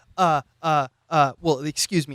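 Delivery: put-on hesitant stammering voice. Comparing a character to Brandt from Big Lebowski: stuttering Brandt impression. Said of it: "he's like".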